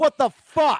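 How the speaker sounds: very high, exasperated, disbelieving exclamation.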